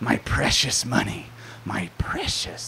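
very soft, breathy whisper. Speaking to an audience, acting out a thought in a Gollum impression. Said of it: "There's a Gollum impression".

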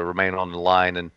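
ordinary talk

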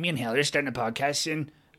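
deliberately bad put-on nasal accent. Recalling a guest telling the crowd about a podcast: bad impression of Jordan, nasal accent. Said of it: "deliberately doing a bad impression".

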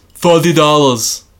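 put-on deaf-speech accent. Retelling asking Mr. Ferrigno for a picture at a convention, the speaker imitates Ferrigno's accent. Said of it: "Did you know that before you made that accent?".

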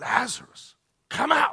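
very loud, very high-pitched shout. Retelling how Jesus called Lazarus from the tomb: acting out a loud shout. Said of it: "I don't want to shout, but it was".

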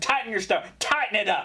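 put-on screaming. Retelling how an old man screamed at the speaker, retelling a scream. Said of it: "he starts screaming".

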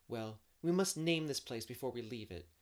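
plain reading voice

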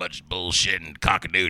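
hobo voice, pitched very low. Showing how an actor who always plays a hobo talks: George Buck Flower voice. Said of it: "But he talks like this".

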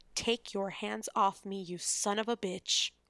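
low, shaking, trembling voice. Narrator reads Lillian's reply to Westcliff's threat, in a low, shaking voice. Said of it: "answered in a low, shaking voice".

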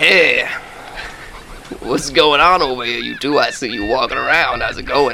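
put-on Louisiana-accented sailor voice. Voicing a sailor who greets two players: louisiana accent. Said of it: "Is he from Louisiana?".

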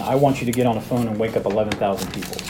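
normal talking voice

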